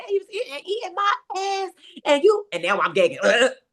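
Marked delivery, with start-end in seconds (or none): 0.0-2.5 put-on very high voice breaking into tearful sobbing. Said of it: "breaks down and starts crying".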